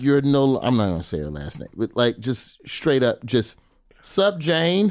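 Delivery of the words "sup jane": put-on very high-pitched, casual old pimp-style voice. Retelling greeting a former teacher in Target, imitating own pimp-style greeting.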